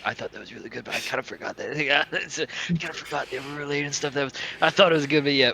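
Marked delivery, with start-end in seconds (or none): 0.1-4.1 soft, hushed half-whisper under the breath. Retelling what a man half-whispered while others talk, retelling a half-whisper. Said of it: "just as he whispers".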